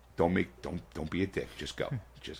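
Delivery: acted pleading tone. Retelling giving another player a warning: retelling pleading with the TV. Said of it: "I'm pleading with the T V going".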